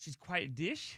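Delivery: rising pitch on dish. Repeating a phrase someone told them to say: rising question intonation. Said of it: "he says it with a question mark".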